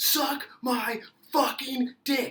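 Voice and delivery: put-on, very high shrieking, screaming outburst. Retelling a fight, acting out a woman at a man who barely spoke, retelling a scream. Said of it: "she just starts screaming".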